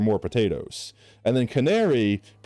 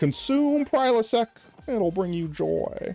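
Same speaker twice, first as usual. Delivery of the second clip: very high-pitched, slow, stretched-out comic voice; 11 semitones higher than usual. Retelling a podcaster's line in a Larry the Cable Guy impression. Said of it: "a Larry the Cable Guy impression where it was like".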